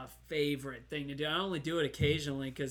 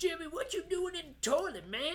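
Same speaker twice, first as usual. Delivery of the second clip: very high, put-on country-accent voice. Picturing being a dad on the couch calling to Jimmy, country accent. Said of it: "for some reason I get a country accent".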